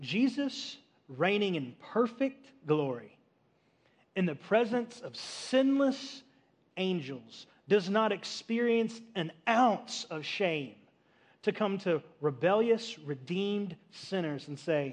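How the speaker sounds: very slow, deliberate, drawn-out, every word lingering. Telling listeners to let this soak in, said slowly. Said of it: "I'm going to say it slow".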